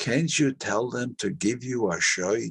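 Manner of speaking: put-on Yiddish accent. Retelling what mom said on seeing the show: imitating mom's heavy yiddish accent. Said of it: "she had this heavy Yiddish accent".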